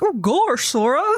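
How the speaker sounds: silly cartoon sidekick voice. Describing a game scene, quoting Goofy beside you: Goofy voice. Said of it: "fucking Goofy next to you being like".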